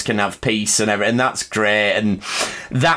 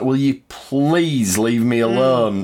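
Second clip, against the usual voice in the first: acted, slow, drawn-out, almost begging tone; 2 semitones higher than usual. Retelling the start of a scene: imitating M'Benga pleading. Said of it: "M'Benga's almost pleading with him".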